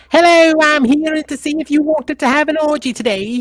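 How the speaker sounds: very high, very loud, shrill put-on voice. Doing a voice after being asked for a Russell Brand impression: Russell Brand voice. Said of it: "do your Russell Brand voice".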